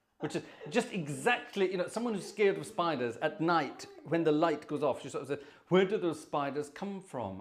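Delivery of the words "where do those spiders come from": ordinary talk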